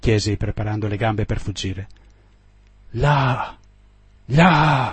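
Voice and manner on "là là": strangled, choked cry with "Là" stretched long. An officer points to the ship's wake and exclaims, in a strangled voice. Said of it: "esclamò egli con voce strozzata".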